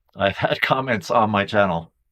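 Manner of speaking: speech broken up by laughing throughout. Mentioning comments left on the channel, laughing while talking. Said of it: "I'm laughing 'cause I think it's funny".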